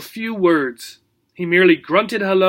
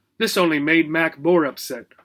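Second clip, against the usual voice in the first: usual speaking voice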